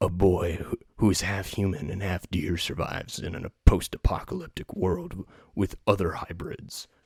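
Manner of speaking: low, loud epic trailer announcer voice.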